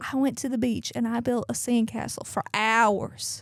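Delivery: put-on Southern accent. Retelling what a friend's wife said at the beach: imitating Kelsey's Southern accent. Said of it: "she gives such a Southern accent".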